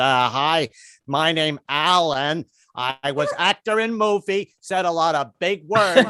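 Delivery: very slow, blank, dazed, nervous drawl. Imagining himself as a teen in a film: mock lobotomized voice. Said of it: "sounded like somebody who just had a lobotomy".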